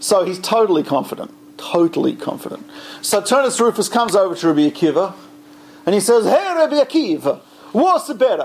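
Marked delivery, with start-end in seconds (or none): 6.2-8.5 put-on Italian accent spoken in a high voice. Retelling Turnus Rufus coming over to Rabbi Akiva: Turnus Rufus with Italian accent. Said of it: "I don't know if the ancient Romans had Italian accents or not".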